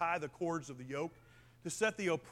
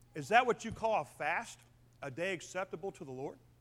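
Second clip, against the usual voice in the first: ordinary talk, nothing marked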